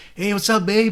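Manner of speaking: put-on American accent. Retelling phone calls home while speaking in american: american accent. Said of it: "speaking in American".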